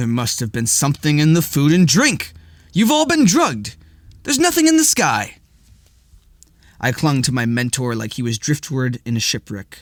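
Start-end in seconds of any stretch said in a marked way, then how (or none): 0.0-5.4 fed-up, exasperated, high and swooping. Bishop looks from the narrator to the stars and pinches his nose, exasperated. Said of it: "His devotion was an enormous monument that nonetheless cast a shadow of ignorance across his vision, / [name] looked from me to the dazed stars and pinched his nose. / [name]'s expression brokered no".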